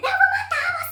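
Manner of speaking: put-on old lady screaming, very high, very loud. Telling about a crowded train platform, the speaker imitates an old lady yelling. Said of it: "E a senhora começou a berrar".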